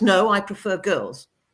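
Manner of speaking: defiant, braced, standing-firm tone. Asked if they have a boyfriend, the speaker repeats their own defiant reply. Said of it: "kind of in this defiant voice".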